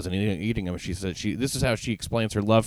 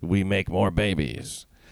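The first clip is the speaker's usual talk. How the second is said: put-on Eastern European accent. Quote a woman's promise as she leaves Brooklyn criminal court, in an Eastern European accent. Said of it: "in her Eastern European accent".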